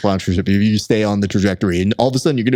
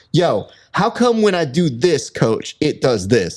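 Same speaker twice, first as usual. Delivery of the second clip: put-on pitched-up, slow Bronx street-kid delivery; 5 semitones higher than usual. Retelling what a young trainee asked his coach: A Bronx Tale voice. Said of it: "He sounds like he was in, like, A Bronx Tale".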